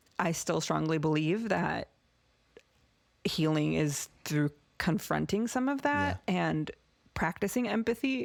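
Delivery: choked-up voice, words thick with emotion. Explaining a belief about healing through empathy, getting emotional. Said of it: "I'm getting emotional".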